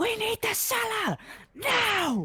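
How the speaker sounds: high, drawn-out, wildly swooping shouted yell. Bursting in and demanding the cellar, yelling. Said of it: "I'm just gonna yell".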